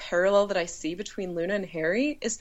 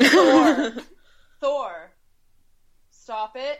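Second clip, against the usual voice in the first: loud, slow, scolding yell, one word stretched out; 6 semitones higher, 7 dB louder than usual. Pausing the talk to yell at the dog: yelling at a dog. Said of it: "I'm gonna yell at my dog".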